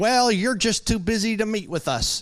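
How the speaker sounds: put-upon grumbling tone. Retelling what a few church members would say: imitating a grumbling complaint. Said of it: "who would grumble from time to time".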